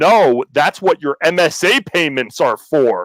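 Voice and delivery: mock screaming, high and drawn-out. Retelling reacting while watching a hearing: retelling own screaming. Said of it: "I'm screaming at the computer while I'm watching this".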